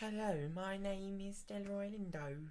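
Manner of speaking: very quiet, soft Birmingham accent. Showing how he does british without going posh: birmingham accent. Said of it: "like a Brummy".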